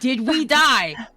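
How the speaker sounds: loud yelling, shouting. Playing an elf calling across to the party in another room: yelling. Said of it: "I'm straight up yelling across the".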